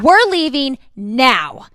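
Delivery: put-on unkind, harsh tone. Retelling telling her kids they were leaving: imitating her own unkind tone. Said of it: "there was not happiness and peace in my voice".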